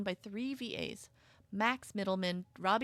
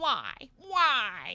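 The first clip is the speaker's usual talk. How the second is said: loud cartoon voice, each why stretched, swooping up and down; 4 semitones higher, 7 dB louder than usual. Reacting while playing a game: Linda from Bob's Burgers voice. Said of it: "Linda, not Lois".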